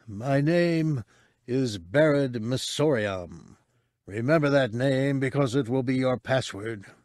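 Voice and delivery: ghastly, hoarse, husky, pleading rasp. Narrator voices Missoriam speaking to Cabe; hoarse, husky Missoriam voice. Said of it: "A human courier. ... the man pleaded in a ghastly husk of a voice".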